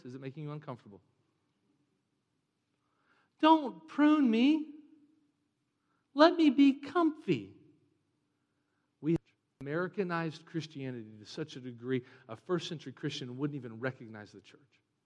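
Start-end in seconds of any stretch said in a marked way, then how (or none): 3.4-7.5 high, loud, cheesy sanctimonious voice.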